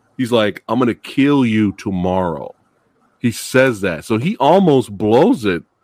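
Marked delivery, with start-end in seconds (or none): none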